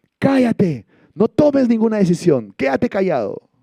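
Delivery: furious yell, very high, very loud, shrill, swooping. Retelling shouting from the office at someone making a decision, retelling an angry shout. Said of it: "desde mi oficina le grité".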